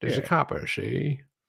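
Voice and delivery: put-on 1940s old-movie gangster tough-guy voice. Showing friends how the guys talked in old 1940s movies, 1940s movie gangster voice. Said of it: "that's how they used to talk".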